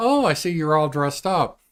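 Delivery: sarcastic delivery. Retelling a remark on someone not wearing a suit: imitating a sarcastic remark. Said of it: "that's sarcastic".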